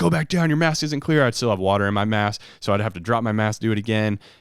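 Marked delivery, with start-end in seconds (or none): 0.0-1.2 mock high-pitched screaming. Retelling an instructor in the water, in his face: imitating someone screaming. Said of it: "just screaming at me".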